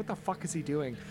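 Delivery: soft, low muttering to oneself.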